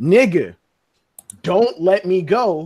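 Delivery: completely calm, calmest possible delivery. Retelling how Garp spoke to another man, in the calmest voice he had. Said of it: "in the calmest voice that he had".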